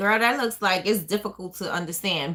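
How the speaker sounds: normal talking voice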